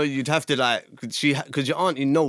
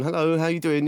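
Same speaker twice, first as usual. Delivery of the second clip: mock upper-class voice; 3 semitones higher than usual. A dad retelling how his kids hear him answer the phone, posh phone voice. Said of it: "put on your posh voice".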